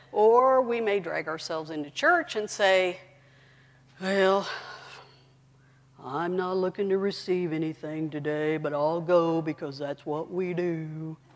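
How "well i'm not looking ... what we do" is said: glum, mopey, gloomy donkey character voice. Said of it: "That was my ear voice".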